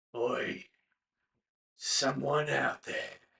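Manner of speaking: hollow, pained, creaky voice calling out. Narrating a voice echoing from the room around the corner, hollow, pained voice. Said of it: "It sounds hollow and pained".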